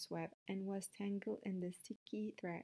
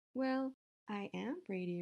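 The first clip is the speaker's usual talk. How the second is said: ordinary delivery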